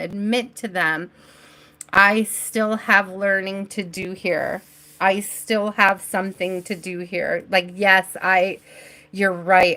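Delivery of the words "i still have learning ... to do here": normal talking voice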